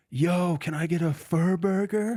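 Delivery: acted, all-out top-of-lungs yell, very high. Retelling a stranger standing behind them in a donut line, retelling a loud yell. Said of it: "at the top of his lungs, like as loud as he possibly could".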